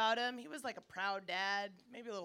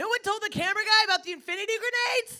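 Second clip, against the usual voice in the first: very loud, shrill, full-volume yelling; 12 semitones higher, 13 dB louder than usual. Speaking right after the gunfire and screaming stop: yelling. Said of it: "Why are you yelling?".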